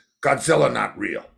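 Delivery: curt, dismissive, snippy delivery with real attitude. Retelling the tour minder's reply: imitating someone with an attitude. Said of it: "he says to me with an attitude".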